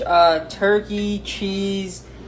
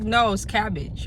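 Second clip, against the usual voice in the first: normal talking voice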